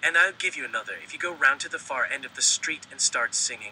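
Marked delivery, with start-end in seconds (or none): none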